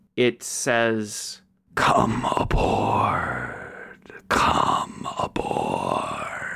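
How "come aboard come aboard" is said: very slow, creaky, sweet, eerie voice. Game master voicing a strange sweet noise to the players, slow and slightly terrifying. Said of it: "it is slow and slightly terrifying".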